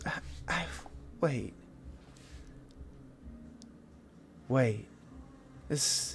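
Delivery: hushed, whispered, echoing, ghostly, ethereal orb voice. Narrator voices an orb that stops dead beside an altar; echoing ethereal orb voice. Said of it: "the echoing ethereal voice of the orb".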